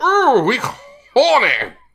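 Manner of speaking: very high, swooping English accent. Showing how English people say the line, in an English accent. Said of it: "when we say it, we go".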